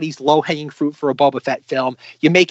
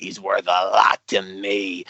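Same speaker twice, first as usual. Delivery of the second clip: gruff, lower, put-on bounty hunter voice; 8 semitones lower, 4 dB quieter than usual. Retelling a Boba Fett line from the book: gruff Boba Fett voice. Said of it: "gristled, gruff voice sounding".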